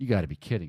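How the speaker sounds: low mutter. Telling a story, quoting a man who spots a kid, retelling a mutter under breath. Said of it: "He says it like under his breath".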